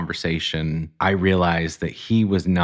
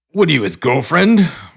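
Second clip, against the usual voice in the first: put-on very high, shrill, loud, heated angry voice; 10 semitones higher, 8 dB louder than usual. Telling a story, the speaker quotes a man who got angry, retelling an angry question. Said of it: "he's like getting angry".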